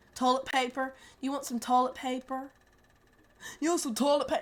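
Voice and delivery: put-on Appalachian accent. Describing how people there talk, the speaker puts on an Appalachian accent. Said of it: "Do an Appalachian accent".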